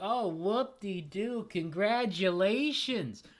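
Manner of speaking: slow, drawn-out, unimpressed, sarcastic praise. Describing how people congratulate a team they didn't want to win, mock-sarcastic congratulations. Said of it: "not making it sound sarcastic".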